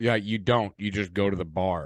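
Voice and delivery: mocking, sarcastic, dismissive tone. Retelling a reply to a drunk umpire: imitating own sarcastic reply. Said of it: "I sarcastically reply with".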